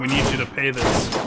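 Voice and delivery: ordinary talk, nothing marked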